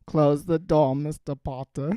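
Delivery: put-on creepy, drawling voice. Continuing a Snape bit addressed to Mister Potter: creepy Snape voice. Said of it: "now you're doing fucking Potterotica".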